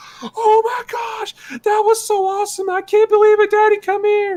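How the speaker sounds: put-on thrilled, very high, excited shriek. Retelling a family member watching a show in the office: imitating someone screaming excitedly. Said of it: "is screaming".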